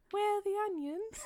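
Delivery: very high-pitched, loud British accent. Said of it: "It's just slightly higher in the voice".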